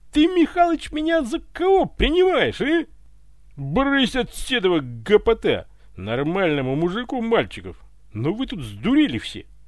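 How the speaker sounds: loud, high, drawn-out open shouting. Narrator reading Ivan's reply to the butler Mikhalych, yelled. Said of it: "заорал Иван".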